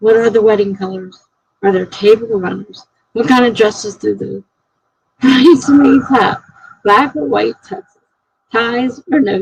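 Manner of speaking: normal talking voice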